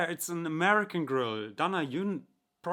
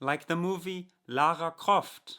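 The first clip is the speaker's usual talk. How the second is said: put-on strong, heavy German accent. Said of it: "imagine this was a really strong German accent".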